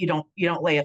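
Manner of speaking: usual speaking voice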